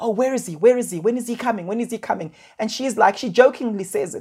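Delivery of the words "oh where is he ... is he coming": anxious, fretful, worried tone, repeated over and over. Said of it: "the mom was quite anxious saying".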